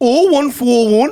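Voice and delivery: slow, loud Geordie accent. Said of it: "What's the number in a Geordie accent?".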